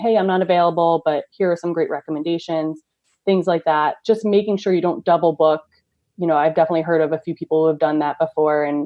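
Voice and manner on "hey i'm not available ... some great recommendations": ordinary delivery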